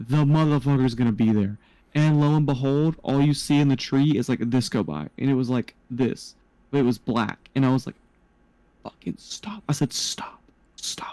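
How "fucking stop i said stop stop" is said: soft, urgent whisper under the breath. Speaker retells what they said while watching something in a tree: whispering. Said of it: "and I'm whispering stop".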